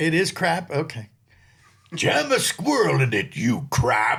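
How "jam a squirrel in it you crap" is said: put-on, swooping, hammed-up cartoon voice. Trying out a line for Pete, in a Pete character voice. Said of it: "Here's Pete".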